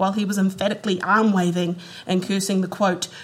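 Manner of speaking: ordinary delivery, nothing marked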